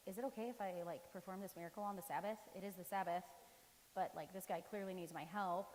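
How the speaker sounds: plain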